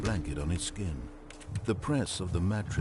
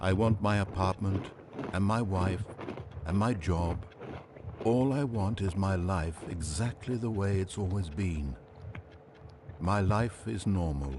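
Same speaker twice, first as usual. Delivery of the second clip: normal talking voice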